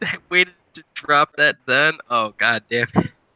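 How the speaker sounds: speaking through helpless laughter. Reacting to another speaker's surprise reveal: laughing while talking. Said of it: "I'm just laughing so hard".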